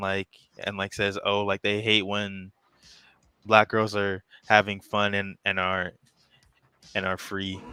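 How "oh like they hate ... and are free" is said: usual speaking voice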